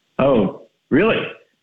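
genuine, caught-off-guard surprised reaction. Hearing that a woman from a date wants to reach them: sounding surprised. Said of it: "You sound so surprised".

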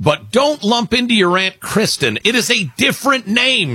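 high-pitched read-aloud voice. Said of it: "she writes".

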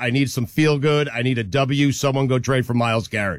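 ordinary talk, nothing marked

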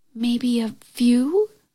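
whispering. Narrator reads a girl answering the witch's question, whispered. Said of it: "whispered the girl".

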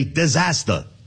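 Brooklyn accent, r dropped in disaster.

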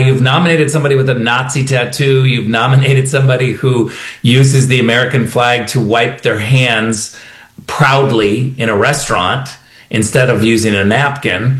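normal talking voice

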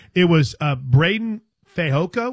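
very slow, careful, every word deliberate. Speaker naming a player carefully so as not to get in trouble, said very slowly. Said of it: "I said that very slowly".

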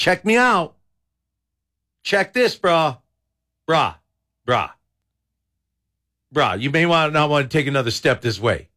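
rattlesnake voice with bro-style talk. Joking about how rattlesnakes act: voicing a rattlesnake. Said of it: "rattlesnakes are more of like".

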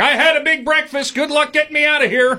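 put-on very high-pitched shouting voice. Retelling a 73-year-old man being hauled out, yelling back to the court: retelling a yell. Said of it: "he's yelling back to the court".

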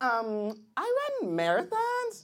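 put-on young woman voice.

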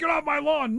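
put-on grumpy old man yelling.

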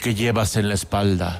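very low, ghostly voice from beyond the grave. Telling a story, a voice in the cemetery questions the hunchback: voice from beyond the grave. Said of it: "una voz de ultratumba".

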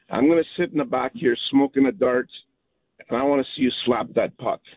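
plain

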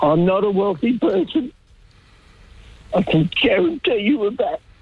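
distressed, getting upset. Speaker responding to the Prime Minister's remark on family trusts, upset. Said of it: "Sorry for getting upset".

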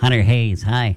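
put-on nasal voice. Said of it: "It was that nasally?".

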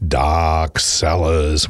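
spooky announcer voice, dropped far down. Announcing a Halloween event to listeners: spooky voice. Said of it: "put on spooky voice".

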